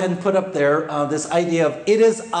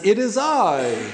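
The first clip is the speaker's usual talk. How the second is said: mock stilted, stiff British voice. Mocking how translators render the line: imitating a stilted british voice. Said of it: "A very kind of British, you know, almost stilted".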